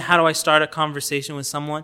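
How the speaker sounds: plain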